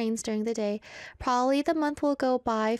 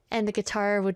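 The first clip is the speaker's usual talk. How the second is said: ordinary talk, nothing marked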